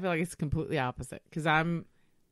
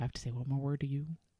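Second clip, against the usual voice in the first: dropped tone, lower and quieter; 3 semitones lower, 6 dB quieter than usual. Retelling leaning in to warn kids in public: imitating own lowered voice. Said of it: "my tone drops".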